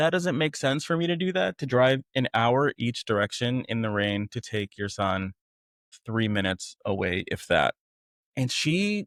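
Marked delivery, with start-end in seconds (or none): none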